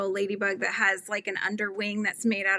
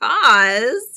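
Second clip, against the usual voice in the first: because with stress on every syllable; 2 semitones higher, 11 dB louder than usual. Retelling how she says the word, emphasis on each syllable of because. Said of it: "I put a lot of emphasis on the, the different syllables".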